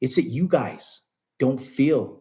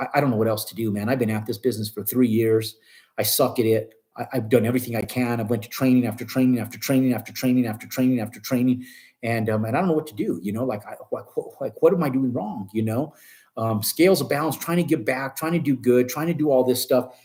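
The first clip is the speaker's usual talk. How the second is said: plain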